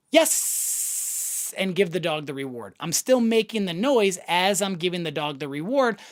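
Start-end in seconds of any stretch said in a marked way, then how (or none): 0.2-1.6 yes drawn out with the s held. Dog training, saying the marker word while giving the reward, drawn-out yes. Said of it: "the word continues into the second second".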